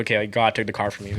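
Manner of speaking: ordinary talk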